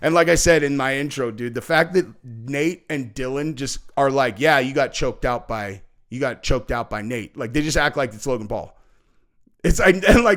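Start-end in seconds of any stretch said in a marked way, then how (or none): 4.4-7.4 put-on deadpan delivery. Describing how two people act about the fight, imitating deadpan delivery. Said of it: "they're just deadpan".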